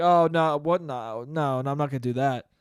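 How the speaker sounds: mock hesitant, jittery, nervous voice, slow. Retelling a movie scene where the kid asks for a trick: imitating Adam Driver nervously. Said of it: "Adam Driver all nervously is like".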